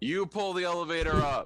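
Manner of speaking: loud, unconcerned yelling call. Calling up to the others to pull the elevator: loud yell, not concerned. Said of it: "Not in a concerned voice, but just, like, a loud".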